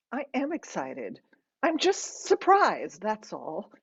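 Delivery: plain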